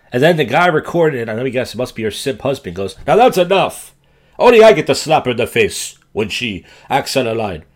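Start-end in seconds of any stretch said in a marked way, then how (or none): 3.0-7.5 terrible, loud, put-on Spanish-sounding accent.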